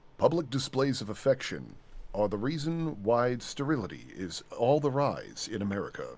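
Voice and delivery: straightforward, grave, deep, dead-serious documentary narrator delivery. Describing a mock anti-makeout PSA, the speaker performs its narration in a deep-voiced documentary narrator style. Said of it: "deep voice person doing the narration".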